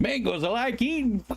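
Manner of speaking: put-on old Italian man voice. Recalling an old Italian man at a grocery store, loud imitation of him. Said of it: "And he was just so loud".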